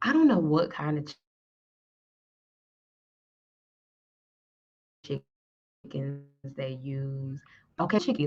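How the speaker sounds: speaking in a whisper. Wondering what kind of chickens Costco uses for its chicken breasts: whispering. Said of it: "I don't know why I started whispering".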